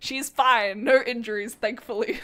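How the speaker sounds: words broken up by giggles. Recapping a crash, amused by a character's name, giggling while speaking. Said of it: "I keep giggling".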